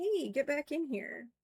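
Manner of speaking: high, little cat voice. Retelling the cat meowing from the door: voicing Reese the cat. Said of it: "Reese started meowing at us, like".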